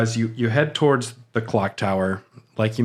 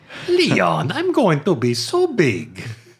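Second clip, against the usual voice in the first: deliberately bad, put-on villain voice; 5 semitones higher than usual. Talking to Leon about being big, in a terrible villain impression. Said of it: "That was a terrible impression".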